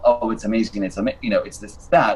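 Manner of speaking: ordinary delivery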